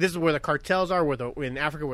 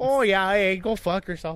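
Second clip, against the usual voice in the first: polite put-on Canadian accent; 4 semitones higher, 3 dB louder than usual. Joking about how polite that accent sounds, in a put-on canadian accent. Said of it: "they could tell me to fuck off in that accent".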